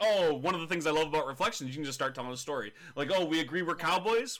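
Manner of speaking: ordinary talk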